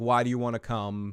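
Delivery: ordinary talk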